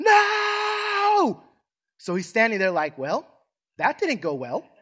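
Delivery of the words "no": mock very high, shrill, stretched-out screech. Telling of a minister's words to a woman, the speaker re-enacts her scream. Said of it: "screams, shouts out at the top of her lungs".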